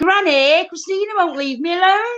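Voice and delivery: put-on high-pitched child's shout. Recalling coming home every summer and calling out to Granny: retelling a childhood shout. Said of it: "I'd shout in the house".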